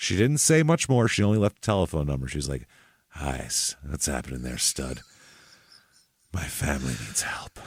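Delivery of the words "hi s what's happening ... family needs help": put-on sultry seductive voice, lower and quieter. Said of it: "She had a sultry voice, sexy, sexy, sultry voice".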